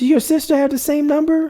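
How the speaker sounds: very high, put-on, feminine-sounding woman's voice. Retelling a conversation, doing the woman's side: imitating a woman's voice. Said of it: "That is not no woman's voice".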